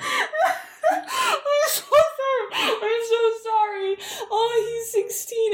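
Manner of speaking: laughing while speaking.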